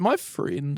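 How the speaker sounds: unsure, hesitant, half-hearted, unconvinced tone. Echoing the other person's earlier words back to them: imitating a hesitant tone. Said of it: "you did not say that with a whole lot of conviction. You sort of said".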